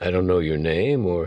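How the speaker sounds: ordinary delivery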